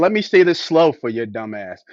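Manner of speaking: ordinary talk, nothing marked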